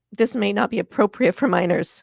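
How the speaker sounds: ordinary talk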